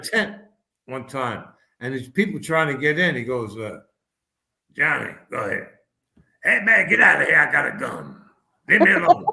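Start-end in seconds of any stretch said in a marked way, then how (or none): 4.7-9.3 put-on gravelly radio DJ voice. Retelling a moment in a tent on tour: Wolfman Jack impression. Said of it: "I used to do, like, an impression of him".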